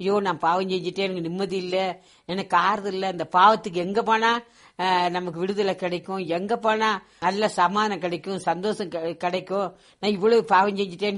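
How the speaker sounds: usual speaking voice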